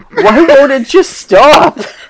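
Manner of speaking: put-on, very high, loud, shrill, genuinely upset kid. Retelling what a kid said while getting upset, imitating an upset kid. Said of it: "he's getting, like, genuinely upset".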